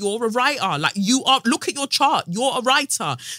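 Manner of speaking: insistent berating, pitched high and loud.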